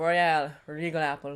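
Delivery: put-on vaguely Jamaican accent. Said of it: "I don't know what that accent was".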